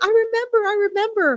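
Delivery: high-pitched animal voices.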